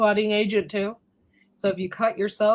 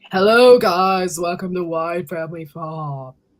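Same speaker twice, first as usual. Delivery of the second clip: raspy, hoarse low voice, louder; 3 semitones lower, 6 dB louder than usual. Greeting viewers as they arrive, raspy low voice. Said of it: "that's how my voice is right now".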